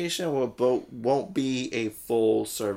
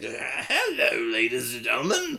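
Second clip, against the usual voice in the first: slow, drawn-out put-on voice swooping up and down. Retelling an audition where the actor was asked to do a voice: Joker voice. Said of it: "and did the whole voice".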